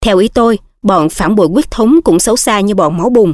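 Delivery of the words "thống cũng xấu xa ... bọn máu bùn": plain reading voice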